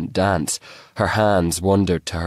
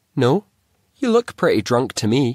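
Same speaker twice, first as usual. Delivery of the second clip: playful, high, sing-song teasing with swooping tune; 6 semitones higher, 4 dB louder than usual. Woman to a man who says he isn't drunk: teasing. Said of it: "she teased".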